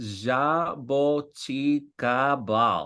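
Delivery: pronounced with a Brazilian Portuguese accent. Asked to try the word with a brazilian accent, saying it in a brazilian portuguese accent. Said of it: "Com sotaque brasileiro?".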